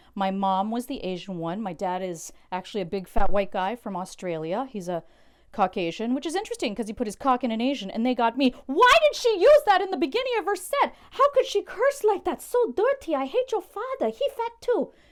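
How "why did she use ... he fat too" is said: very high-pitched, shrill, loud voice. The speaker voices their mother speaking to them from beyond, imitating mom's voice. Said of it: "That's my mom's voice speaking to me from beyond".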